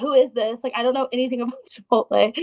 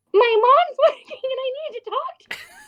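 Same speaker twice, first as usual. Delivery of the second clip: fake toddler voice, higher pitch; 12 semitones higher than usual. Retelling calling a restaurant phone line to get transferred: put-on toddler voice. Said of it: "if you put on a toddler voice".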